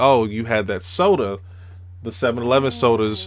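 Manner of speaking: ordinary delivery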